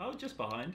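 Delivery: surprised tone.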